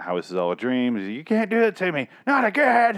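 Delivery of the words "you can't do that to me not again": mock, very high, rising, frantic panicked screaming. Retelling a scene where a sentenced man screams at the district attorney: imitating a panicked scream. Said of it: "He starts screaming at the district attorney".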